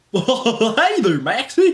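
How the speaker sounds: bad, bouncy, high and loud cartoon voice. Responding to a request, the speaker attempts a Goofy impression. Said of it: "do an impression of Goofy".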